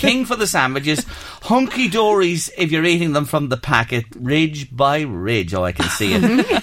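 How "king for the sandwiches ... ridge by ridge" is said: ordinary delivery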